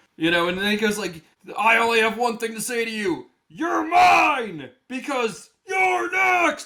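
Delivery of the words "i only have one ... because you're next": rising high scream, "mine" drawn out. Retelling a wrestler yelling at an opponent: imitating Goldberg yelling. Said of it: "he's screaming in Gunther's face".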